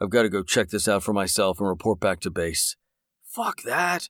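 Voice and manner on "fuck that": high, hushed whisper under the breath. Narrator reading a man's reply to his companion, whispered. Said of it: "Jake whispered".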